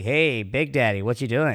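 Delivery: loud, casual, buddy-style delivery. Showing how the manager greets people: imitating his manager's way of talking. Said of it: "he'll be like".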